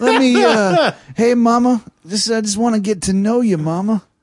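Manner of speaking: very high-pitched put-on crunchy hippie voice. Imitating an imagined hippie named Zeke: put-on hippie voice. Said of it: "my Zeke the hippie".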